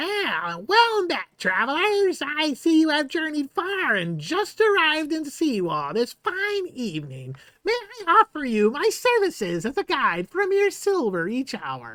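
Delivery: very high, swooping, raven-like birdlike voice. Voicing a raven-like Kenku guide greeting travelers: Kenku guide voice. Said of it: "he says".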